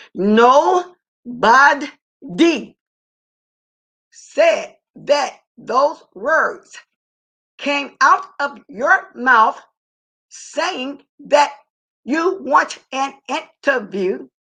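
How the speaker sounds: very slow, deliberate, each word laid out. Repeating a point to someone so they can understand it, very slow and deliberate. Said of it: "I'm talking real slow so you can understand it".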